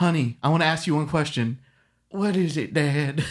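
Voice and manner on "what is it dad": put-on very slow, aged old man voice. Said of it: "That sounded like an old person".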